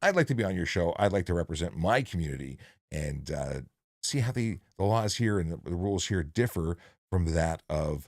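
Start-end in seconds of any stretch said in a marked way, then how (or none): none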